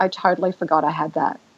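ordinary talk

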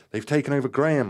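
loud, high shout full of horror. The narrator, gripping Graham's hand, shouts in horror to the others. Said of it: "I shouted in horror".

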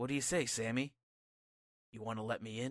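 play-acted very soft, low, hushed, dark, serious, menacing. Retelling a wrestling segment, voicing Bray as he turns dark: imitating a serious, darker tone. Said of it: "he gets a little more serious and says".

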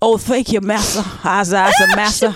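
put-on Southern drawl, dragged out. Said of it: "bring in my fog on Leghorn accent".

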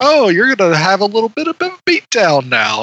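upbeat, cheerful, high put-on robot voice. Retelling a robot's line from a film: imitating a robot voice with super positivity. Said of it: "that robot, uh, syncopation he has with his voice".

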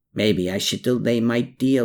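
ordinary talk

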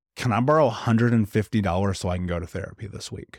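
ordinary delivery

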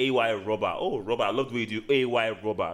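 ordinary talk

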